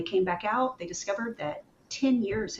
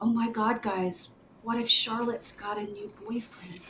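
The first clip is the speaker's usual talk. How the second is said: put-on crushed, heartbroken, devastated tone; 3 dB quieter than usual. Retelling what a player said when his face fell: imitating a heartbroken player. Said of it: "And he was heartbroken".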